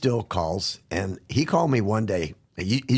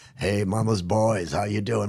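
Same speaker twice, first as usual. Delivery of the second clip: put-on Liverpool (Scouse) accent. Retelling a man greeting the group as he walked in, liverpool accent. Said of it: "With that Liverpool accent".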